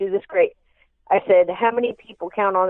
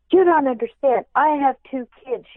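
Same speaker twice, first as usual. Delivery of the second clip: high, loud screaming yell; 6 semitones higher than usual. Retelling a radio call-in where a lady phoned in: imitating a caller screaming. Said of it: "and she's screaming".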